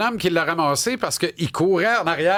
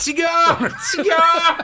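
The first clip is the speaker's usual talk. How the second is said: put-on yelling, higher and louder; 12 semitones higher, 4 dB louder than usual. Retelling calling out for a lost dog in the street: imitating someone yelling. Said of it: "Qu'est-ce que tu cries dans la rue ?".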